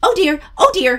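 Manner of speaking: little high-pitched elf voice. Recommending a book to read aloud, speaker shows how to voice the elf: little high-pitched elf voice. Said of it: "that little high-pitched voice".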